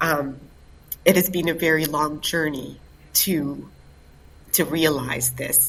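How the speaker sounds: choked-up voice, catching with emotion. Announcing a first-of-its-kind event after a very long journey to realize it, choked up. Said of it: "I'm getting choked up".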